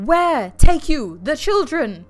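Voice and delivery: loud, slow yell. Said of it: "a man began yelling".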